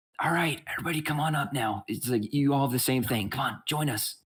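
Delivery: acted-out whisper. Retelling what a woman higher up the wall said, retelling her whisper. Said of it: "she basically kind of like whispers".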